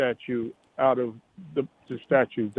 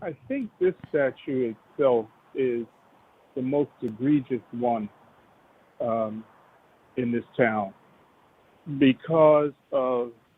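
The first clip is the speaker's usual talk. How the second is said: speaking through a numbed mouth. A caller on a radio show, just back from the dentist, speaking with a numb mouth. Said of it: "so my mouth is kind of numb".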